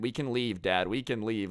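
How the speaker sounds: ordinary talk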